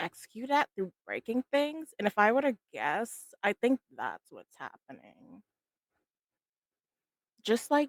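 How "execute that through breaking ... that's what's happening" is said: whispered in-character aside. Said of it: "I'm just gonna whisper to Vanil-".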